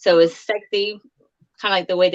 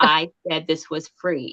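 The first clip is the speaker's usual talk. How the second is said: severe, stern, no-nonsense objecting tone; 3 semitones lower than usual. Retelling what a woman said during a photo outing: mock-stern retelling. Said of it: "in such a stern voice".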